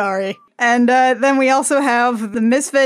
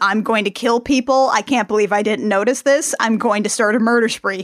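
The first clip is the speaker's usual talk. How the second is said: ordinary delivery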